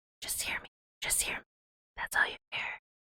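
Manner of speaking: hushed, breathy, very quiet ASMR whispering. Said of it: "A S M R whispering".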